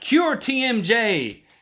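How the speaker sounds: mock announcer voice, slow, high, drawn out.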